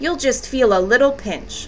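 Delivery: plain reading voice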